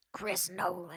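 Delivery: put-on old lady character voice. Repeating a director's name: old lady at the casino voice. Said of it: "I sound like an old lady at the casino".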